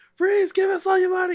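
loud, barking, yelled delivery. Narrating a robbery to the players, voicing the robbers, yelling. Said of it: "yell at everybody".

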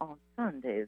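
imitated lovely West Virginia accent. Retelling what a store clerk said in West Virginia: imitating a beautiful West Virginia accent. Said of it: "in the most beautiful accent I've ever heard".

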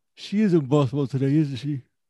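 words spoken while yawning. Chatting with others after walking the dog, yawning while talking. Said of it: "What the fuck fuck was you speaking in? / I was yawning".

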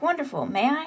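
beaming, eager tone. Retelling what someone said when the panel opened, acting out a beaming reply. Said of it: "Luca's beaming".

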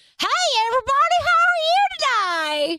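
shrill, very loud, high crazy-lady voice. Demonstrating the character he uses when calling people; crazy lady voice. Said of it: "I talk to them as the crazy lady".

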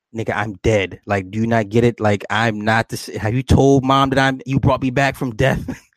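ordinary talk

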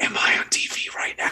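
hushed, leaned-in whisper, up close. Retelling what the guy at the urinal whispered: imitating a whisper. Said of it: "leans in close and whispers".

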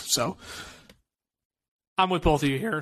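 voice cracking and breaking through the line. Agreeing with both other speakers when the voice suddenly cracks: voice cracking. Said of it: "oh boy, voice crack".

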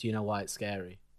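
plain

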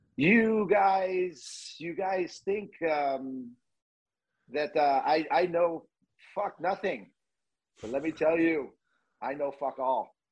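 put-on high, very slow, drawn out French accent. Retelling a coach's angry locker room speech: Jacques Demers French accent. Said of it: "in his French accent".

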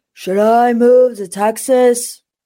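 slightly mumbled speech. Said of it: "Let me try to do my best [name] impression".

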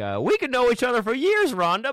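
put-on disbelieving host voice. Speaker imitates a show host reacting to his co-host; mock incredulous host. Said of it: "assumed this position of incredulity".

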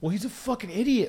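exasperated, snapped delivery.

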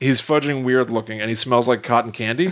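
ordinary delivery

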